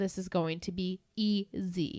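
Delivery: ordinary delivery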